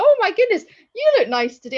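astonished, very high, swooping surprised gush. Imitating people who compliment the speaker's looks: imitating a surprised tone. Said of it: "with a tone of surprise in their voice".

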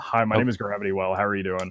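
put-on flat monotone voice. In a group chat, doing an impression of a chat member: monotone Gravity Well impression. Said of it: "does he speak very monotone like that".

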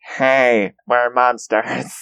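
goofy, silly, unconvincing monster voice. Mocking a scary show's monster after hearing it: imitating the monster voice. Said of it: "the monster voice".

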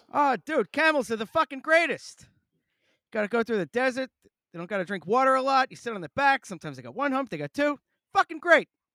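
very loud, high-pitched gushing rave. Doing a bad Bill Burr impression, raving about camels: bad Bill Burr impression. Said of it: "bad Bill Burr impression".

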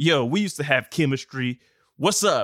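put-on bassy bro accent, low.

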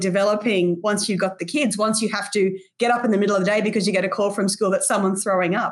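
normal talking voice

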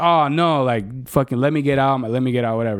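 ordinary delivery

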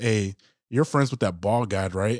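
soft, hushed half-whisper, close to the mic. Retelling what the player sitting next to them half-whispered: imitating a half-whisper. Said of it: "then he whispers to me".

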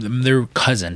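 plain

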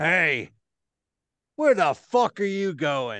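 voice of a huge, hulking brute. Voicing a very large man confronting a player: voicing a Goliath. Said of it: "He's like".

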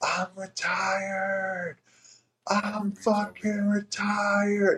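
mock top-of-lungs scream, very high, slow, drawn-out. Speaker recalls being alone in the woods after a call, retelling a scream at full lungs. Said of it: "screaming at the top of my lungs".

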